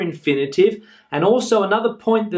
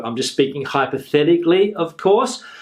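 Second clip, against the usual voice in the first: usual speaking voice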